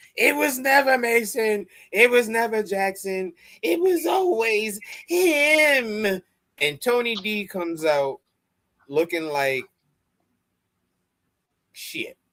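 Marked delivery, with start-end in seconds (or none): 0.2-6.2 high-pitched mock scream. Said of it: "Robert Stone screams".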